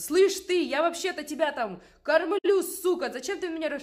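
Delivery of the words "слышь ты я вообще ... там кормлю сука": very loud, slow, drawn-out bellowing yell. Speaker acting out how men yell at a woman: retelling a man yelling. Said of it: "А они на нее начинают орать".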